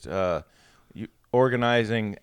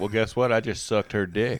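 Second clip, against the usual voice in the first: ordinary talk, nothing marked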